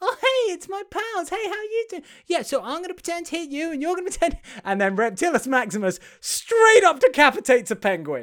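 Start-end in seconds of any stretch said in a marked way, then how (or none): 0.0-4.4 high-pitched toy character voice. Retelling a scene as Trixie greets the soft toys: imitating Trixie. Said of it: "And Trixie is like".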